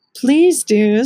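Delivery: loud, earnest pleading. Reading a story aloud, voice Auntie Em pleading with the narrator. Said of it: "Auntie Em pleaded".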